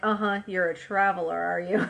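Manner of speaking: mimicked sarcastic tone. Speaker acts out how she greets someone back from traveling, retelling her sarcastic remark. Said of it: "what little notice she does take is sarcastic".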